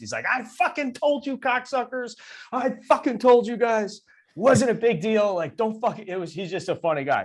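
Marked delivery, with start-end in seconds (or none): 0.3-6.1 very high, loud yelling voice. Retelling how a college teammate came into the dugout: imitating a teammate yelling. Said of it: "He's yelling at us".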